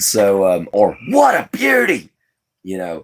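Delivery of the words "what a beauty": very high, showy delivery with pitch shooting way up. Retelling phrases they used to copy: Steve Irwin impression. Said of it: "I used to copy him a lot".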